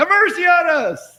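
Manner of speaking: put-on shrill yell, pitched very high. Retelling a story, the speaker voices two men crying out: retelling a yell. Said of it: "these two guys start yelling".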